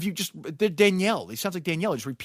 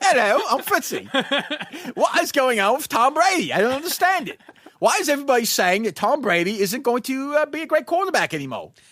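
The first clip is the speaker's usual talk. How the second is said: jokey, loud, high put-on British accent; 8 semitones higher, 5 dB louder than usual. Doing a comedy bit as a british persona: british accent. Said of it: "My British accent is not bad".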